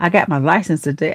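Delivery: ordinary delivery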